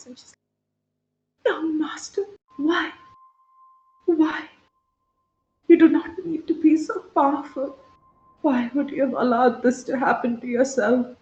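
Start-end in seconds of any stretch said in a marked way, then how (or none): 1.5-11.0 crying, tearful, pitched-up pleading. Voicing a servant holding the player's face: tearful pleading character voice. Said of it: "you see tears in her eyes".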